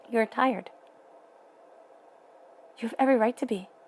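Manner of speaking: emotion rising, getting choked up. Speaking to Scorpio, choked up. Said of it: "sorry, I'm getting choked up".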